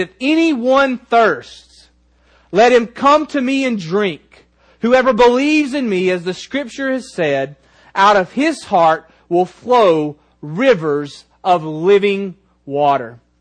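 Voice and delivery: put-on, cried-out, proclaiming call. Quoting scripture to listeners, the speaker acts out him crying out very loudly. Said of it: "he cries out very, very loudly ... Just like this".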